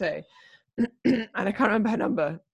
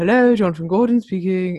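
louder, put-on posh voice; 7 dB louder than usual. Describing how their dad answers the phone, imitating Jonathan Gordon's posh voice. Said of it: "he sounds posh".

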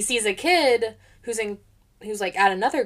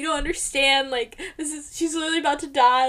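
put-on tearful boy voice, higher; 6 semitones higher than usual. Retelling a scene where a boy can't afford shoes: imitating a crying boy. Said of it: "The boy's at the counter, like, crying. He's like".

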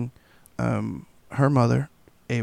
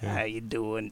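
put-on deep raspy voice, quieter; 9 dB quieter than usual. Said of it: "Funky Cold Medina type voice".

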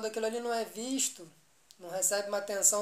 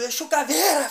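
sudden yell bursting out, high-pitched and loud; 5 semitones higher, 10 dB louder than usual. Retelling waking up from a dream, retelling a yell. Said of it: "saiu um berro".

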